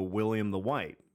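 ordinary delivery

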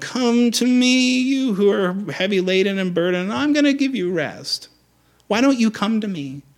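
whining, complaining, high whiny tone. Speaker shows the wrong way to read a verse, in a whiny tone. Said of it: "it's easy to read these in a whiny tone".

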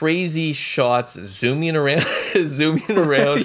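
words broken by laughter. Describing a movie's opening shots, laughing while talking. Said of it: "Sorry, I'm, like, laughing, talking about it".

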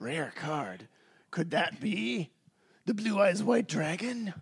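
put-on anime-style character voice. Retelling a scene to another speaker, doing the Seto Kaiba voice. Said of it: "You have to do the Seto Kaiba voice".

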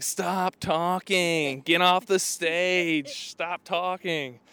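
put-on high screaming, very slow and dragged out. Retelling how three girls at the stage front heckled: imitating girls screaming. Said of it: "all screaming".

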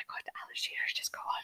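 loud unsubtle whisper. Retelling how media colleagues gossiped about a man who just left, whispering very unsubtly. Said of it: "we whispered very unsubtly".

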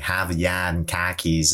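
overdone Boston accent, laid on thick and drawn out. Showing how an actor might fake the local accent: exaggerated boston accent. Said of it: "not the actual accent".

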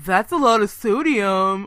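acted, loud, disapproving sneer. Retelling what a coworker says about frozen lunches, imitating a sneer. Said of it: "she always sneers at my frozen enchiladas".

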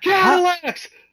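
imitated yelling ad announcer. Imitating another loud tv ad announcer: imitating a yelling ad announcer. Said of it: "Or maybe it was just that announcer".

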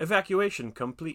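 high, little robotic machine announcer voice. Retelling a scene's joke ending, doing the little machine voice. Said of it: "the little, machine voice thing is like".

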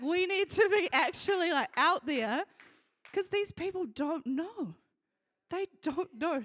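overcome with feeling, pressing. Speaking to fellow churchgoers about people who don't know, emotional. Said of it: "Sorry, I'm so emotional".

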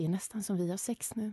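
whisper. Retelling leaning in behind a woman at a throw-in, whispered in her ear. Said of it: "viskade i hennes öra".

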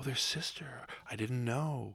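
hushed, very quiet, sympathetic and concerned voice. Acting out a caterer answering a friend who orders a shiva meal; mock-concerned caterer voice. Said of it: "caterer voice".

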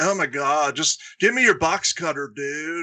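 put-on funny stoner-type voice. Describing a stoner type guy, speaker does a Crispin Glover stoner voice. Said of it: "That kind of like funny voice".

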